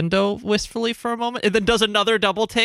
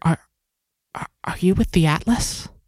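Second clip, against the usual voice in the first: secretive, hushed, stammering whisper; 2 semitones lower than usual. Voicing a character who leans in to a player: whispering. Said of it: "whispers into your ear".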